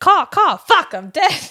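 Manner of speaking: very high, loud crow voice with caws. The speaker announces an impression and does a cawing crow impression. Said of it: "I'm gonna do an impression".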